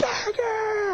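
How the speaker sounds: put-on high, excited kids' shouting.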